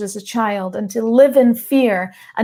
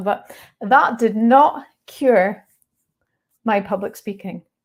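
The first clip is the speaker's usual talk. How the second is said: emotional, slow, voice catching, choking up. Speaking to an audience about their public speaking, getting a little emotional. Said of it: "I'm getting a little bit emotional".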